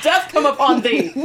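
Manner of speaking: loud, high, theatrical Elizabethan stage declamation. Joking about another speaker being ready to kill over 50 bucks, mock Shakespeare voice. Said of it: "I don't know why I went Shakespeare".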